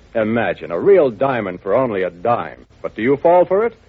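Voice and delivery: ordinary talk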